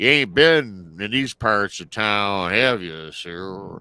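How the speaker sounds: exaggerated, played-up, creepy local kid voice. Retelling what a kid who came out said to him, in an exaggerated imitation. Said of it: "I'm enhancing his voice".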